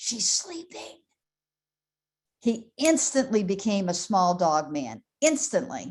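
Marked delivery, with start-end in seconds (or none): 0.0-1.0 soft, hushed whisper under the breath. Telling about the husband in the recliner with the dog on his chest, retelling a whisper. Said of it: "he whispers".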